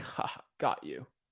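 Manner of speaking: breathy, smug, gloating whisper. Acting out a seller who said maybe to an offer: imitating a smug seller. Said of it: "they're all smug".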